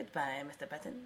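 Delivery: deep, hushed, very low and very quiet. After being pressed to do it and fed the movie line, give your best Lo Pan impression. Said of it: "do your best Lo Pan impression".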